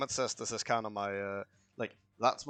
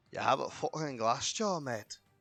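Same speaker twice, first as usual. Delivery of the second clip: put-on Scottish accent, higher; 4 semitones higher than usual. Commenting on a game to a co-player, suddenly in a scottish accent. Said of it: "Why are you being Scottish all of a sudden?".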